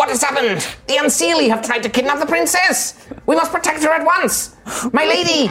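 very high, tiny little soldier voice. Narrating a fantasy scene where tiny warriors speak: high-pitched put-on voice. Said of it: "you hear in a kind of high-pitched voice like".

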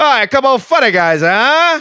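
high, loud, barked mock tough-guy voice. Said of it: "it sounds like a parody".

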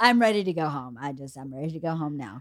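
acted, level, flat deadpan, very low pitch. Retelling what Sydney kept saying the whole time: imitating Sydney's deadpan. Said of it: "in her, like, deadpan".

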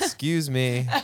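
imitated inviting tone. Retelling what they said to roommates: imitating own "who's next" tone. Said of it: "a "who's next" kind of tone".

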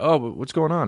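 deliberately quiet, hushed, high, stumbling stammer. Retelling own reply to a loud talker, imitating own quiet reply. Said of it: "And I talk quieter".

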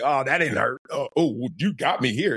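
put-on giggling, teasing tone. Retelling own joking talk while being hit on the field: retelling own giggling taunt. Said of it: "I'm giggling. I'm like".

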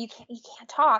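put-on whisper. Retelling a hunting partner's instruction not to talk: imitating someone whispering. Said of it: "he whispers".

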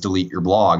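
ordinary talk, nothing marked

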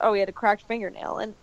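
ordinary talk

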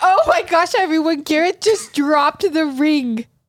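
tearful. Reenacting their proposal with her partner, she talks to everyone while crying with emotion. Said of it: "I'm crying".

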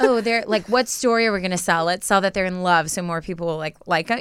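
ordinary delivery

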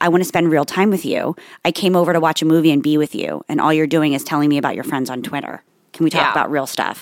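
ordinary talk, nothing marked

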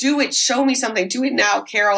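ordinary talk, nothing marked

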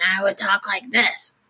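drowsy, ill-sounding voice. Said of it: "my throat would be really groggy".

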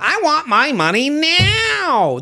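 very high, very slow, shrill, drawn-out sing-song whine. Retelling a commercial where someone demands money: imitating a whiny commercial guy. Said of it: "This whiny guy".

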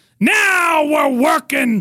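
high, rousing showman's yell. Recalling what he yelled after every joke in his early act: retelling a yell. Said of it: "I would yell".

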